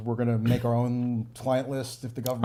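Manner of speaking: ordinary talk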